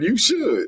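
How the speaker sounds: mock casual, offhand, unbothered delivery. Retelling another speaker's cocky reply after hearing agreement: imitating Chris saying it nonchalantly. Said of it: "how nonchalantly Chris said".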